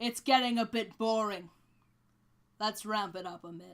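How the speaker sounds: deep booming godlike voice. Narrating the scene, the speaker voices the god shouting out: booming Talos shout. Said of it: "he shouts out in a booming voice".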